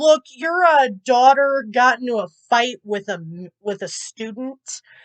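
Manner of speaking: usual speaking voice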